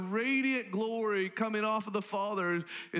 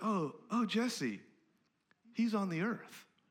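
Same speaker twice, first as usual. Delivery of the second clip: acted kind, compassionate voice; 3 dB quieter than usual. Retelling a conversation, speaking Jesus's reply in a kind, compassionate voice. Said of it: "in a kind, compassionate voice says".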